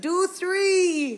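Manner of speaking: put-on crowd yelling. Retelling what the crowd yelled during the show: imitating a yelling crowd. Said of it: "people are yelling out".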